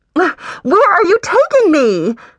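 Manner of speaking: high, muffled voice. A woman being carried off demands of her captor, in a muffled voice. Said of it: "voice muffled".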